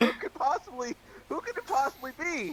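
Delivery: very loud, shrill, high-pitched delivery. Asking the room in character who the brother could be: very loud. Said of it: "I say it very, very loudly".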